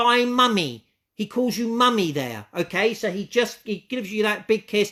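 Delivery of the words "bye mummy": mock shouting, higher pitch. Speaker passes on a spirit's farewell to his mummy, retelling a shout. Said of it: "And he shouts out".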